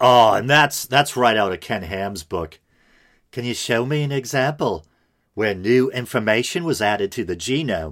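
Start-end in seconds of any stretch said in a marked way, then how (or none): 3.3-7.9 clumsy, bad fake Australian accent drifting toward English. Quoting an argument out of a book; horrible fake Australian accent. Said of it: "that was a horrible Australian".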